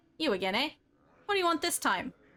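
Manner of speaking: nasal, clipped voice. Reading a leather-skinned shopkeeper's lines aloud: nasal clipped voice. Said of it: "His voice is nasal and clipped".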